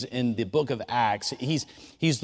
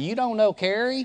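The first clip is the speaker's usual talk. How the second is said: North Carolina speech, raised pitch; 9 semitones higher than usual. Retelling sitting at a round table, quoting Rusty in Rusty's North Carolina accent. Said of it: "in his North Carolina accent".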